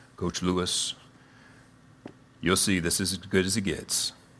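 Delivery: put-on deep jock voice, low and soft. Retelling what the athletic director said when he sat the speaker down, imitating a deep voice. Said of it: "he had a real deep voice".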